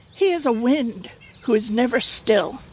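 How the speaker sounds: ordinary delivery, nothing marked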